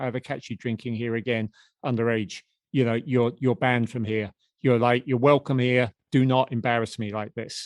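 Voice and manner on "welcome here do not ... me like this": ordinary talk, nothing marked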